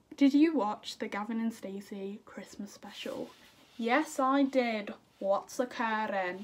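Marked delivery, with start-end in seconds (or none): 5.2-6.4 clumsy, bad put-on Welsh accent. Saying they watched the christmas special, then quoting it in a bad welsh accent. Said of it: "That was a bad Welsh accent".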